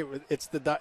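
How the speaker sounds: ordinary talk, nothing marked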